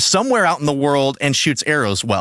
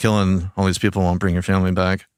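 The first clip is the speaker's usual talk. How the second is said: bone-dry deadpan, very low and level; 7 semitones lower than usual. Retelling a movie scene where a character answers another: Scarlett Johansson deadpan. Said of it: "the most Scarlett Johansson deadpan".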